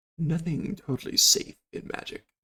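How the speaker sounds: slow, seductive, suggestive stage whisper. Voicing a shopkeeper leaning close to a player's ear: suggestive half-whisper. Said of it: "whispering in your ear, very suggestively".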